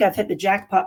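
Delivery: normal talking voice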